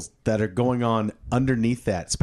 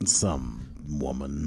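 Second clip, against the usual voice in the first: very low, hushed nineties movie-trailer announcer voice; 11 semitones lower, 7 dB quieter than usual. Answering a question by slipping into a 90s movie preview voice. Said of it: "you just went into 90s preview like preview yeah".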